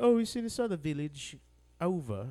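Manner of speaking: fake, offhand put-on British accent. Imitating characters from a british show: put-on british accent. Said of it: "I'm still doing, like, a British accent".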